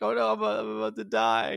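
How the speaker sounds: put-on tearful woman's voice, drawn out. Retelling a woman held at gunpoint, imitating her crying. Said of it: "in tears".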